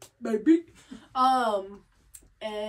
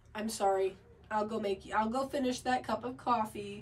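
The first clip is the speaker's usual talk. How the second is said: plain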